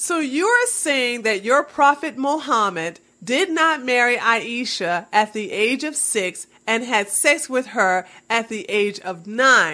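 plain

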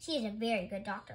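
plain

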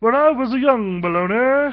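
stuck-up puppet voice, very high, very loud, shrill. Describing the puppet he performs with, the speaker demonstrates its snooty voice. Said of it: "but he's kind of snooty".

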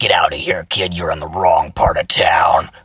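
low, tight, constricted squeezed-throat voice. Demonstrating voice techniques, showing a constricted-throat voice. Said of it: "you can make it constricted".

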